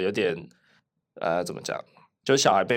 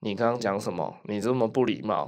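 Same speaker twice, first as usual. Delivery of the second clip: normal talking voice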